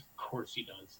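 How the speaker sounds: hushed, barely audible whispered mutter under breath. Retelling a commentator's aside, imitating Jim Ross muttering under his breath. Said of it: "under his breath, he goes".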